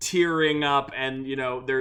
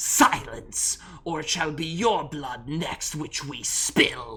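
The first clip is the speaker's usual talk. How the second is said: menacing hissing demon voice. Retelling a scene, the speaker voices a demon threatening a woman; hissing demon voice. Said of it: "The demon like hisses at her".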